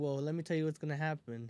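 normal talking voice

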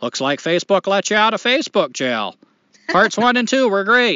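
put-on Maine accent, put on. Reading a listener's message aloud, in a Maine accent. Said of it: "this is my Maine accent".

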